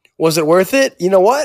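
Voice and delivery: normal talking voice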